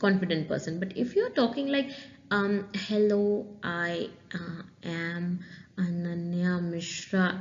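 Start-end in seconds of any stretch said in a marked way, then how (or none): 2.3-7.4 very slow, unsure, halting, full of fillers. Showing how a hesitant self-introduction sounds, hesitant with fillers. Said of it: "the person will know in seconds that you are a very hesitant person".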